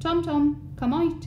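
annoyed, cross tone. Thomas steps into his room calling his cat to come out, cross. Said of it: "I said crossly".

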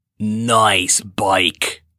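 rough, grating, scratchy rasping voice. Reading a story aloud, the narrator voices someone speaking to Riley: scratchy voice. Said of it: "said a scratchy voice".

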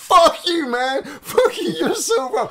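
very high, loud, stretched-out screaming. Retelling a talk with someone who disagreed, imitating inner screaming. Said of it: "inside I was screaming like".

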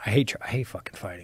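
fierce, fast, hushed whisper.

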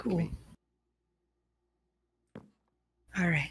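very soft, ASMR-style voice. Chatting while playing with friends, the speaker says: asmr type voice. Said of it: "heard that in like an ASMR type voice".

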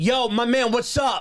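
confrontational in-your-face tone, high, very slow, drawn out. Teasing another speaker about how they get attention: imitating a confrontational greeting. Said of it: "you have a confrontational way".

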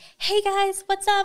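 fake social-media influencer voice, very high. Describing coworkers who act fake on social media, mimicking a fake high-pitched voice. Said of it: "They use the high-pitched voice".

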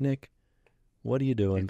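ordinary delivery

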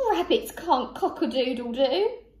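laughing through the words. Cockerel responds to Rupert the rabbit's failed attempt at his call, laughing. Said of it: "laughed Cockerel".

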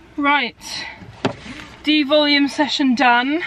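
winded, breathless voice. Speaker has just finished a workout session: out of breath. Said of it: "Weirdly out of breath".

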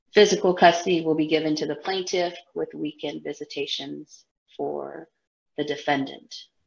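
fast, unfeeling, flat, level monotone drone. Retelling a custody hearing, imitating the judge's monotone, unfeeling voice. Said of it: "monotone, non-empathetic voice".

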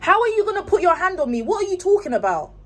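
high, loud, fake argumentative shouting. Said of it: "act like I'm having an argument".

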